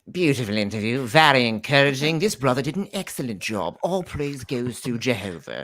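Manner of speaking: adopted British English accent. Asked to do accents, the speaker performs a quote in a British accent. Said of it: "I have to do British accent".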